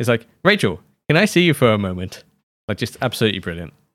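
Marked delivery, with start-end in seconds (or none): 0.4-2.2 professional, businesslike office voice. Recapping a TV episode, quoting Chandler calling Rachel over the intercom, Chandler's professional voice. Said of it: "I love his professional voice here".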